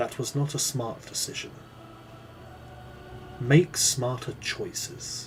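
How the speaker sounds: menacing whisper close to the ear. Narrator voicing a figure who leans in behind you: whisper. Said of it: "he whispers into your ear".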